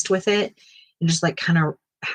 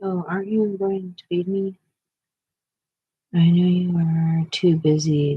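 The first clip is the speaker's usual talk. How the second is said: sarcastic, mocking, taunting, needling tone. Retelling what people say to her, imitating someone mocking. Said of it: "they say mockingly".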